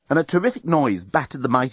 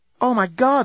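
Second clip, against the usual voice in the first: murmured, very high pitch; 11 semitones higher than usual. Someone watching spacecraft hurtle toward the starship: murmured. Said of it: "murmured Lucy".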